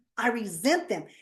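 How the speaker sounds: plain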